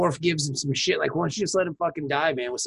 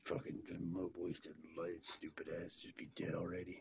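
put-on muttering, much lower and quieter; 11 semitones lower, 22 dB quieter than usual. Retelling a scene with friends, as Worf muttering under his breath. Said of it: "Worf muttering under his breath".

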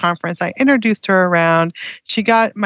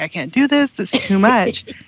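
mock sobbing, put-on crying. Retelling a day crying in the laundry room: retelling own crying. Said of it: "just crying".

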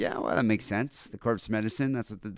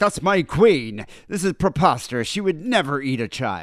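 put-on voice, higher and louder; 4 semitones higher, 7 dB louder than usual. Imitating how a listener would react on hearing the claim: imitating a listener's reaction. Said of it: "Is that your Leander impression".

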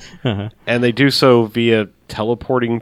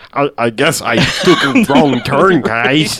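very slow, drawn-out, dopey comic book guy voice; 3 semitones higher, 3 dB louder than usual. Showing what a friend says when they do the comic book guy voice. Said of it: "when we do the comic book guy".

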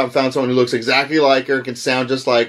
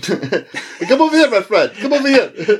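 put-on pushy, pitched-up Persian accent; 8 semitones higher than usual. Joking about someone's look, the speaker plays a used car salesman: put-on Persian car-salesman accent. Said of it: "you look like a Persian fucking used car salesman".

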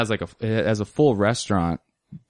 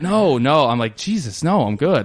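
put-on flustered voice, much higher pitch; 5 semitones higher, 3 dB louder than usual. Retelling a woman screaming an offer of sauces, the speaker acts out being flustered. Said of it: "she flustered me so bad".

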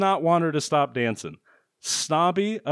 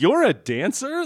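mock shocked disbelief, higher; 6 semitones higher than usual. Retelling a movie scene, quoting a character: imitating a shocked question. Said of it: "he's shocked".

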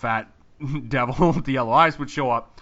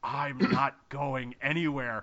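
crazy put-on demon voice, much slower; 8 dB quieter than usual. Speaker recounting a scene, doing a woman's line in a crazy demon voice. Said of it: "in this crazy demon voice".

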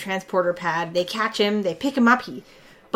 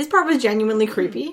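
ordinary talk, nothing marked

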